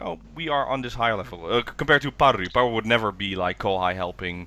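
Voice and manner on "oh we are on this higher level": ordinary talk, nothing marked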